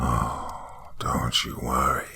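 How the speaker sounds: dry rasping voice. Reading a horror story, a clown-faced man speaks: dry, raspy voice. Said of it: "he said with a dry, raspy voice".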